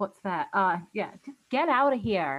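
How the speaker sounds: put-on American accent. Guest showing off their own american accent, annoying put-on american accent. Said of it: "That's my American accent".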